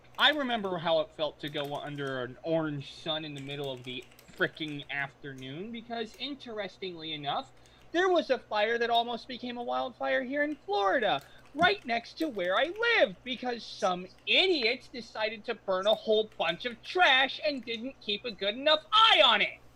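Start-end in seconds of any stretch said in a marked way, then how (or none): 7.9-19.5 loud, high-pitched yelling. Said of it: "Don't need to yell".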